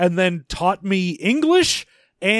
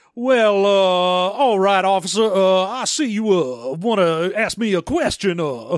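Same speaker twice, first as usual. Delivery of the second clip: put-on blustery cowboy drawl. Imitating a movie character talking to an officer: Foghorn Leghorn voice. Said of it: "he has turned into Foghorn Leghorn".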